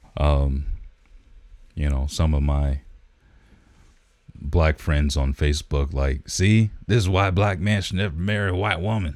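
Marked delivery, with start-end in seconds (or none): 6.3-9.2 quick, put-on southern American accent. Speaker voices posts from his friends on Facebook, in a southern accent. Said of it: "I don't know why I use a southern accent for that".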